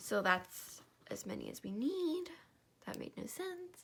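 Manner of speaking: voice cracking and breaking up high. Counting pieces while filming a craft video on camera: voice cracking. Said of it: "that was a good voice crack".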